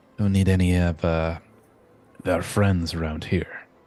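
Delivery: hushed whisper in a put-on voice. Voicing a sailor warning another about the Ziltrans: whispering in character. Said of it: "That's why I'm only whispering".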